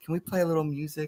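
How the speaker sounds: soft, hushed stage whisper, half-whispered. Retelling how a young son quietly asked his mother: imitating son half-whispering. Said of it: "my son whispers in my wife's ear".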